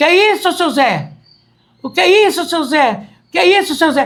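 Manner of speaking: mock shouting, very loud, high, repeated. Recounting yelling at a man urging his horse toward them, retelling own very loud shout. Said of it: "Aí eu gritei bem alto".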